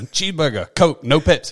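put-on short-order cook call-out, voice lifted. Retelling the skit's cooks behind the counter: imitating a yell. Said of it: "And they would yell".

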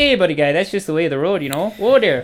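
put-on Canadian accent with rising lilt and upspeak. The speaker shows a key phrase for getting into an accent: Canadian accent. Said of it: "With my Canadian accent".

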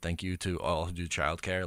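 very soft, very hushed half-whisper. Retelling how a dad spoke into his phone: imitating a half-whisper. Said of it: "his tone of voice changes when he's, like, kinda whispering into the phone".

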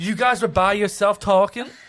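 put-on loud, high woman's voice, Spanish-inflected Texas accent.

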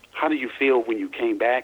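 ordinary talk, nothing marked

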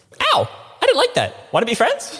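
very high, tiny little pug dog voice. Voicing the pug after a cat bats it: voicing the pug.

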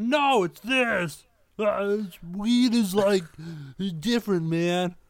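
put-on slow, spaced-out stoner voice. Imitating a friend reacting to the talk: Kurt impression. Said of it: "That's spot on Kurt impression".

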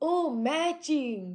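loud, high put-on Japanese accent, broken English. Retelling how a man who bought them clothes talked, in a broken-English Japanese accent. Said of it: "broken English, Japanese accent".

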